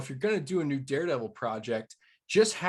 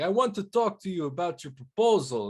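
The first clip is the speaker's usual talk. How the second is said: terrible fake Russian accent, pitched up; 5 semitones higher than usual. Imitating the Russians from season one: bad Russian accent. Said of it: "that's probably a terrible accent".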